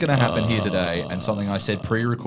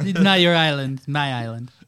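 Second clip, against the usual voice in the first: raised pitch, played comic; 5 semitones higher than usual. Joking around with friends, doing a David Spade impression. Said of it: "an impeccable David Spade".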